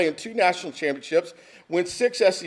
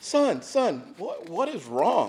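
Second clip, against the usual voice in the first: gentle, soothing, comforting dad voice; 4 dB quieter than usual. Retelling asking his crying son what was wrong, in his best comforting dad voice. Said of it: "in my best comforting dad voice".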